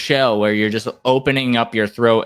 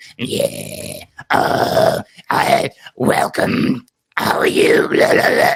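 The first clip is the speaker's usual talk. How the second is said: put-on rough, creaky old-lady smoker drawl, very slow; 3 semitones higher than usual. Showing how to keep the voice light: old lady who smokes too much voice. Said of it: "the old lady who smokes too much voice".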